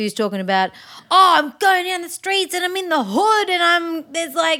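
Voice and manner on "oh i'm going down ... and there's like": broad Australian accent, pitched very high. Discussing consistency in a character concept, demonstrating a strong australian accent. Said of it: "you had an Australian accent, really strong".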